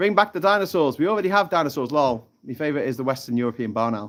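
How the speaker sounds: ordinary talk, nothing marked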